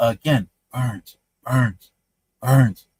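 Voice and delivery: low, hushed, half-whispered stage whisper, repeated. Recounting her half-whispering in the speaker's ear while half asleep: retelling her half-whisper. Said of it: "She's whispering in my ear".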